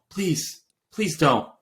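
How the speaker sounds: imitated pleading tone. Retelling a radio message, imitating Toto Wolff begging and pleading. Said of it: "Total Wolf begging and pleading".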